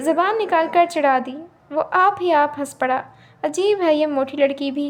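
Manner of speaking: ordinary delivery, nothing marked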